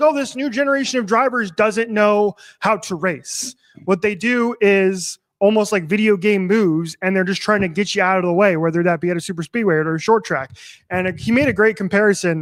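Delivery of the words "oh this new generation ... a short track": normal talking voice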